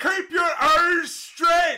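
very high, shrill, loud, barked, strong Northern Irish shout. Quoting a man shouting at him during push-ups, in severe northern irish accent. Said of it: "a man from Northern Ireland who had a very severe Northern Irish accent".

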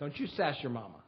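cold, low, very quiet, hushed icy tone. Retelling a man's words to someone at the table, as a mock icy warning. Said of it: "said to him with ice in his voice".

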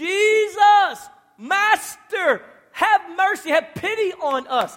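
very loud, high, drawn-out desperate cry. The speaker acts out ten lepers calling out to Jesus, retelling a desperate yell. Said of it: "yelling out".

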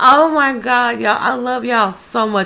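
choked up, holding back tears. Thanking listeners for their support, holding back tears. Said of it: "I'm trying not to cry".

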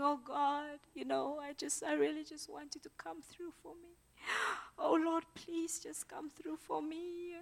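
mock wailing, pleading voice. A speaker imitates Christians crying out to God for things, mock wailing plea. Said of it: "We are like wailing and saying".

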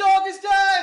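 very loud, very high, proclaiming shout. Opening a poem with a call-and-response line to the audience: shouting. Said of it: "I'm also gonna shout something at the start".

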